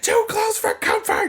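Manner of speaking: high, squeaky blurted voice. Retelling shouting a show title in the middle of the street: imitating own shout. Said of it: "shouted out".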